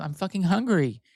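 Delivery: put-on mean, nasty, snapping tone. Imitating the partner refusing to share a bagel: imitating someone being nasty. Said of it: "he was so nasty that day to me".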